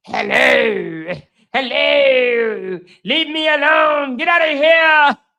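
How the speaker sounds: put-on demonic possessed girl voice, "hello" drawn out. Describing how a woman's voice shifted one day: The Exorcist possessed voice. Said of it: "y'all ever watch The Exorcist?".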